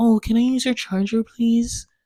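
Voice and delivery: very light, timid, high little voice. Retelling a passenger in his car asking for the charger, imitating a super light voice. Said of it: "his voice was like super light".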